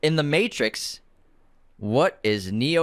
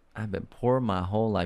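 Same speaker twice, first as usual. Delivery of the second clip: normal talking voice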